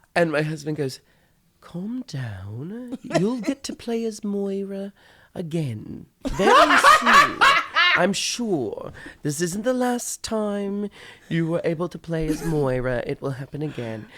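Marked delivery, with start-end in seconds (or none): 1.6-14.1 put-on condescending British accent, slow, drawn out, swooping down. Retelling her husband's reply while she was playing, in a mock condescending British accent. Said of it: "that condescending British accent".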